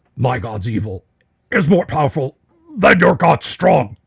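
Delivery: grunted-out speech, grunting creature voice. A game master voices a bugbear speaking to the party, grunting. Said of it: "grunts out".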